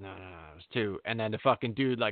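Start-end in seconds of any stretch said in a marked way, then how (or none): 0.0-1.0 hushed half-whisper, under the breath. Retelling how a wrestler tells the ref about the count: imitating someone half-whispering. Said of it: "the guy rolls over and whispers".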